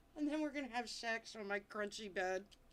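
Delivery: ordinary talk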